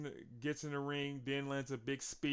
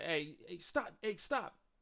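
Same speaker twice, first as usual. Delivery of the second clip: mock yelling, called out, rising each time; 4 semitones higher than usual. Retelling Adam Pearce yelling at Braun: imitating Adam Pearce yelling. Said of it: "Pierce is yelling at Braun".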